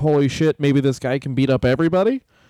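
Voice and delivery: ordinary delivery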